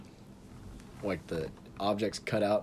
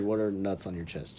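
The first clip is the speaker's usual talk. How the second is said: ordinary talk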